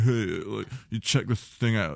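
put-on voice, pretension laid on thick. Retelling handing a woman your short story, in your Buffalo Bill voice. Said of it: "my go-to pretentious asshole voice".

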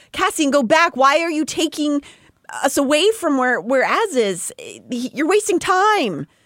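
high, loud, screaming voice. Retelling a book scene, a character ordering him to turn back: screaming at him to go back. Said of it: "And she screams".

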